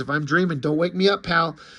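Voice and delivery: ordinary talk, nothing marked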